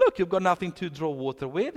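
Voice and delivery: scoffing, sardonic, dismissive, sarcastic tone. Retelling the woman's reply at the well: imitating a sarcastic remark. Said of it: "almost like with a sarcastic".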